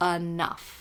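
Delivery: emphasis on 'enough'. Quoting an EMDR therapist's advice from a session, stress on 'enough'. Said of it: "she put the emphasis on enough".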